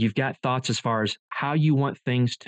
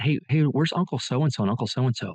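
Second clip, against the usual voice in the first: put-on whispering voice. Retelling leaning in at a funeral service to ask dad: retelling a whisper. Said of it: "kinda whispering to my dad".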